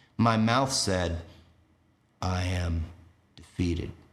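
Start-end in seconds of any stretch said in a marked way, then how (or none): 2.2-3.9 voice sinking slightly lower, dropped a notch. Retelling what his own mouth said back then: a bit lower voice. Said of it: "in a bit lower voice".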